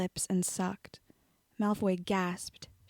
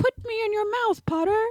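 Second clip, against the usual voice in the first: very high-pitched, loud put-on voice; 13 semitones higher, 7 dB louder than usual. Reading a story aloud, the narrator voices Malfoy's line in Malfoy's high-pitched voice. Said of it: "using a high-pitched voice".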